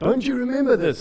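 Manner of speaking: shrill, offended outburst, pitched very high. Retelling a reaction to mom's breakfast offer: imitating own past yell. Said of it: "I yelled at her".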